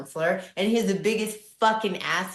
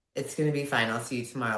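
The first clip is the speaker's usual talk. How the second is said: put-on nonchalance, lower, faster; 8 semitones lower, 4 dB quieter than usual. Retelling what the dad said putting them to bed after a car wreck, imitating calm nonchalance. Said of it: "Like nothing was wrong".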